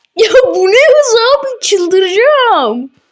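scared, irritated voice. Gamer startled by how fast an enemy moves, angry from fear. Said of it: "Yemin ederim korkudan sinirlendim he".

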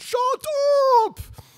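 play-acted, very shrill, high scream, thick German accent. Retelling how a famous child psychologist yelled at schoolkids, in Bettelheim's screaming German accent. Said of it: "scream in his German accent".

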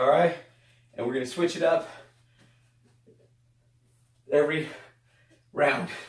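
out of breath, catching breath, breathing hard. Instructor leading a workout, out of breath. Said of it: "try to catch my breath".

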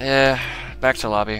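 downcast, low-spirited, sad, dejected voice. A gamer heads back to the lobby after a glitched raid, sounding depressed. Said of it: "You just sound depressed".

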